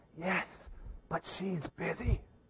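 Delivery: put-on whispered, very quiet little-kid voice. Retelling a child telling a telemarketer his age: imitating a child whispering. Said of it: "little Jimmy keeps whispering".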